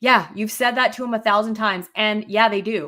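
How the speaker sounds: play-acted snippy, irritable, curt delivery. Retelling what Joe said during an argument with the speaker, mock-snippy retelling. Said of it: "says very like like snippily".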